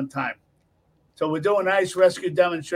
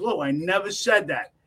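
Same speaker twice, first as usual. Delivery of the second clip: normal talking voice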